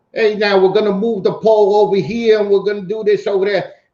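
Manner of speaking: put-on New York accent. Imitating a Con Ed worker from New York: imitating a New York accent. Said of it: "Con Ed worker from New York talking about".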